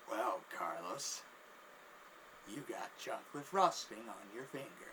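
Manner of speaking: calm, low, slow, drawn-out smug delivery.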